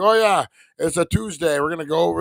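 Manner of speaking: bad, offhand, nonchalant put-on billionaire voice. Imitating how casual he is: horrible Elon Musk impression. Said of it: "that's a horrible Elon Musk".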